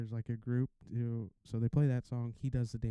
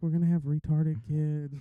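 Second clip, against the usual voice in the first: mock-worried voice, higher; 5 semitones higher, 6 dB louder than usual. Retelling what she said after the news, voicing her: imitating her worried voice. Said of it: "Like you could hear it in her voice".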